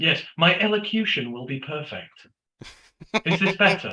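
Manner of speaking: put-on posh southern accent. Speaking posh to satisfy a listener's curiosity, put-on posh accent. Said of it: "we will all try and speak posh".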